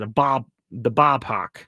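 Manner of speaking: poorly done, fake Boston accent. Quoting someone's comment about a ballpark, bad Boston accent. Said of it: "That was a bad Boston Bostonian accent".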